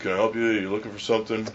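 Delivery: put-on indifferent, dead-level flat monotone. Speaker retelling a worker asking people in every aisle, mimicking her monotone, uncaring voice. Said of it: "in the most monotone, uncaring voice".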